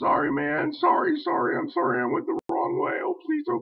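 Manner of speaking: mock screamed pleading. Retelling the Jonah story, acting out Jonah mock-screaming and begging. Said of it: "screaming like a little bitch to God".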